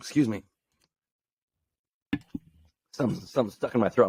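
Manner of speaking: emotional, choked up, something in throat. Talking about confronting a hard situation, the speaker gets emotional. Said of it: "I'm getting emotional talking about this".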